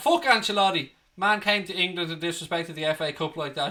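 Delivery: normal talking voice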